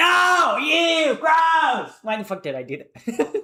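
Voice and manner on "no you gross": piercing, shrill, high-pitched yell at full volume. Reacting to a comment read aloud: yelling. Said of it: "when I yell like that".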